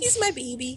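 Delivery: high, schmoopy, lovey-dovey voice. Talking about her husband who is present, schmoopy affectionate voice. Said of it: "I can hear it in her voice".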